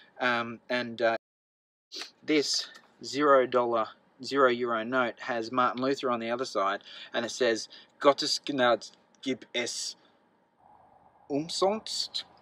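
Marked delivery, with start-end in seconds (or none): 8.0-12.2 slow, halting, bad German accent. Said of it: "I told you my German's bad".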